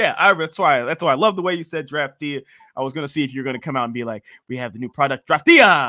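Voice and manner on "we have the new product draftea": loud, swooping, over-the-top put-on Spanish accent. Imitating how the addressee would say it, in a Spanish accent. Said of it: "why you don't talk like that?".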